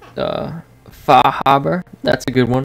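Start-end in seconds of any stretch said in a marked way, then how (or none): 0.9-1.8 slow Boston accent. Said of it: "So, like".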